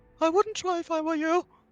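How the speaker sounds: feeble, faint, weak, very high voice. Narrating an unseen voice calling out from behind, weak voice. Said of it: "You hear a weak voice from behind".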